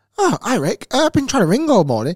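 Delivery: fussy voice, high and loud.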